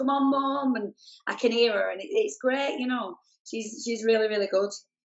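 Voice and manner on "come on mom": play-acted, high, eager cheering shout. Guest describing her daughter at her shows, retelling a shout. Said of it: "she shouts at the top of her voice".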